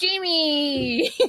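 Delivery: put-on character voice, long stretched-out drawn-out calling. Greeting someone the way the movie Just Friends says it. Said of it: "I wanted to say it like in the movie Just Friends".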